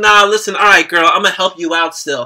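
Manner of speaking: usual speaking voice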